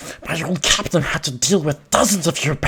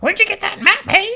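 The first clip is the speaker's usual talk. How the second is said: very high-pitched parrot voice; 4 dB louder than usual. Playing the parrot role, parrot voice. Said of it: "There's an easy parrot voice".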